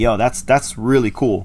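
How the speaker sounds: normal talking voice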